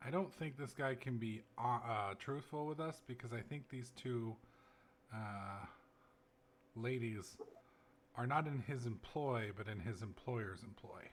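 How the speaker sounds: half-whispered, very quiet, barely audible. Speaking so only the one person beside you can hear, half-whispering very quietly. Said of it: "very quietly so it's just he can hear me".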